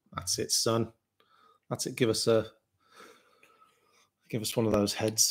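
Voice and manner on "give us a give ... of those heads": unsettling, creepy, leering delivery. Asking for the beer to be poured for the camera: creepy-sounding. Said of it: "It sounded fucking creepy".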